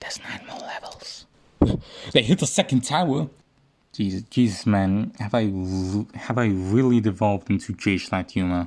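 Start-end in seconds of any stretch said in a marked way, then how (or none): 0.0-1.3 hushed, soft, voiceless whisper. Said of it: "There, there's what?".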